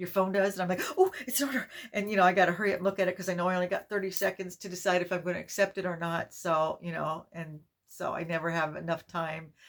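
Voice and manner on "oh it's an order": mock flustered little burst of excitement, pitched up. Retelling own reaction to a phone chime: imitating own excited flustered reaction. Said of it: "I always get so excited and flustered".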